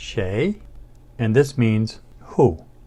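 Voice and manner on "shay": pitch climbing through the word shay. Teaching the word meaning who: rising tone on shay. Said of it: "It's a rising tone".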